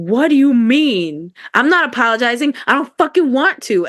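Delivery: imitated screaming while crying. Retelling refusing to apologize when told to go do so, imitating screaming while crying. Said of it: "I'm on the phone screaming, crying".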